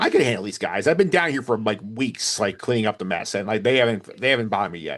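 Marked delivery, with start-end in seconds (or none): none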